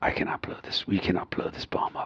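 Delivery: breathy, whispered tough-guy near-whisper. Acting out a bomb expert scene as Jason Statham. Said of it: "Jason Statham".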